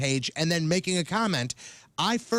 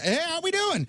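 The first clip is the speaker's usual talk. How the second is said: mock cheery, friendly tone, very high; 12 semitones higher than usual. Retelling greeting a neighbor on the street: imitating own cheery greeting. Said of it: "that's how I always".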